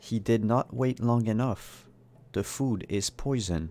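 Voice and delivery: gentle, quiet, softly spoken woman's voice. Game master voicing the voice that speaks to the players, soft-spoken woman's voice. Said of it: "a soft-spoken woman says".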